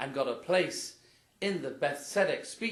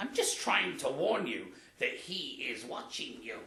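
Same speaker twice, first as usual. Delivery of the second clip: squawky parrot-like bird voice, squawked out. In a story, a parrot speaks to a burglar, squawking parrot voice. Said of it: "And then he squawked".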